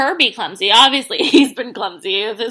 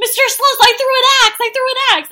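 put-on childlike excited voice, higher pitch; 11 semitones higher than usual. Retelling Peter telling the dad about the axe: imitating Peter excited and childlike. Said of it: "it's so Peter-like".

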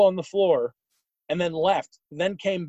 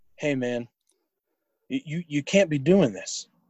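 put-on calm man's voice, lower pitch; 3 semitones lower than usual. Retelling how Carlos pulls the speaker aside, imitating Carlos's calm voice. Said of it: "in his calm voice".

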